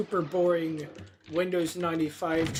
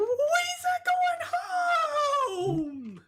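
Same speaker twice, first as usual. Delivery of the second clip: terrible very high swooping shriek, "home" stretched out. Recounting the Jedi Council scene, doing a bad impression of a scream. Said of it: "my impression of that was so bad".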